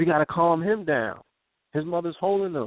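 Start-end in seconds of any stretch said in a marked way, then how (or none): none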